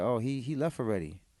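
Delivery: normal talking voice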